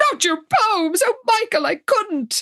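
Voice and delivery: put-on high, gasping, protesting tone. Retelling a scene where a character is handed a notebook: imitating a gasp. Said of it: "she literally gasps".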